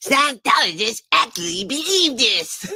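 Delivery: put-on high cartoon child voice. Interrupting to try out a Cartman line for the chat: Cartman impression. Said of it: "I can kind of do a Cartman".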